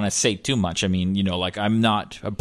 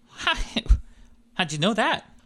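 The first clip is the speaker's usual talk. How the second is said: put-on nervous voice, higher pitched; 11 semitones higher than usual. Voicing the character Jerry greeting a player: Steve Buscemi voice. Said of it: "It is Steve Buscemi".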